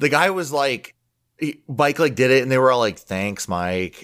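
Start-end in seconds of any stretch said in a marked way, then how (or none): 3.0-4.0 mock grudging, reluctant, forced tone, lower and quieter. Retelling how the girls thanked mike: imitating a reluctant forced thank-you. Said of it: "being forced to say thank you to the cousin they don't like".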